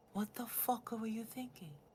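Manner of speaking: soft, hushed, whispered aside. Voicing a character who leaves the room, whispering to Briar. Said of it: "he'd whisper to Briar".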